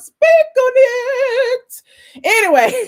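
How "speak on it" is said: very high goat bleat, with "it" drawn out. Answering a comment that the impression beats Kandi: imitating Kandi. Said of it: "I got the little goat thing on".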